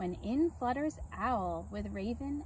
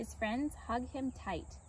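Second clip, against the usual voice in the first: ordinary delivery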